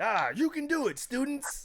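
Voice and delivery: very high, upbeat, overly optimistic anime voice. Imagining playing an overly optimistic teacher, speaker addresses students in an anime voice. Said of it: "my anime voice right there".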